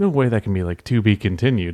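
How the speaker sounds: normal talking voice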